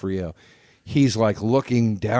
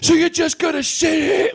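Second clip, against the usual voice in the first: put-on, very high, hammed-up, played-up scream; 4 dB louder than usual. Retelling a movie scene: imitating D'Onofrio's character screaming. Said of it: "screaming at the co-".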